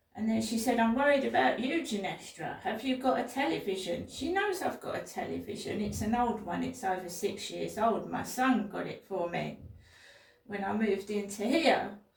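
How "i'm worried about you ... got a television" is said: usual speaking voice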